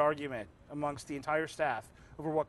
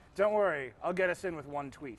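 plain

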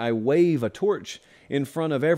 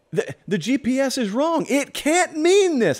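shrill, very high, slow, drawn-out deliberate yell; 10 semitones higher, 3 dB louder than usual. Picturing a passenger saying the GPS is wrong: imitating Dwight Schrute yelling. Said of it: "I'm just yelling at you like Dwight Schrute".

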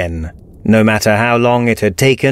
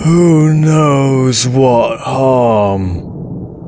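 words lazily slurred together, slack voice; 2 semitones higher than usual. Narrator reads what once was Bill, gripping Dez's throat: slurred speech. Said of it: "it slurred".

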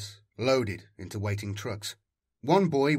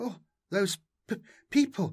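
very high, trembling, shocked, shaken stammer; 10 semitones higher than usual. A woman just brought to safety reacts, stammering, trembling with shock. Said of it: "Zany stammered, trembling with shock".

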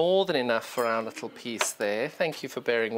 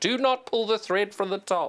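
very high, shrieking scream; 9 semitones higher than usual. Unthreading the sewing machine, quoting a warning: imitating Jenny Raymond screaming. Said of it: "I hear Jenny Raymond screaming in my voice saying".

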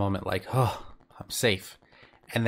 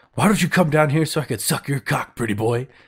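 mock quick, loud, hollered mocking yell; 4 semitones higher, 5 dB louder than usual. Recounting a favorite quote, the speaker acts out a character's line, retelling a yell. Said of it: "So Mia yells".

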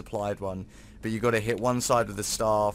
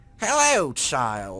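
loud, booming skeleton voice; 4 semitones higher, 6 dB louder than usual. Spotting a skeleton while exploring, greeting it in an attempted Papyrus voice. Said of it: "I can't do the Undertale papyrus voice".

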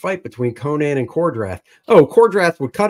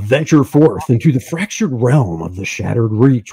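put-on announcer-style radio broadcast narration voice; 4 semitones lower than usual. Introducing a game to newcomers, reading its blurb: radio announcer voice. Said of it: "Trying to do radio voice".

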